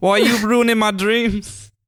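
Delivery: attempted, fake Scottish accent. Teased by the others over the accent, speaking in a put-on scottish accent. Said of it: "I've worked so hard on this accent".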